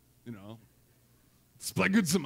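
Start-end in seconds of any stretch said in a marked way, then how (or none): 1.6-2.2 German officer voice, lower pitch. Asking listeners to say a greek word with him, like a german officer. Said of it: "like a German officer".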